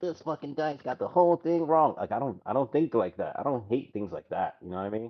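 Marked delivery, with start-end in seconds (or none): 0.0-1.9 put-on nerdy voice, pitched-up and upset. Mocking how an upset nerd would complain: mock upset nerd voice. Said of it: "like I'm upset, like a fucking nerd".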